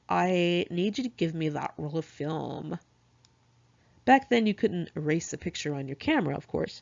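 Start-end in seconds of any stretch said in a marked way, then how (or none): 0.1-2.8 slow, put-on sassy girly voice. Retelling what one of the guys said while saying goodbye, in a sassy girl voice. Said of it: "in his sassy girl voice".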